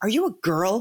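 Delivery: play-acted pointed, suspicious, accusatory tone. Speaker retells a tournament director questioning a player: retelling an accusatory question. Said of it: "in a very accusatory tone".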